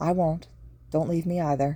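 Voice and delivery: plain reading voice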